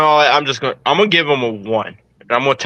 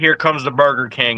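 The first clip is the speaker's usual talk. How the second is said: usual speaking voice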